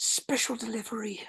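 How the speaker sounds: hushed whisper, pitched very high. A player's character takes careful aim and pulls the trigger, whispered. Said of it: "I am going to whisper".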